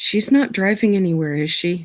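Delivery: voice brought right down. Looking over at a companion, a character asks about someone else, lowering her voice. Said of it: "kind of lower her voice and go".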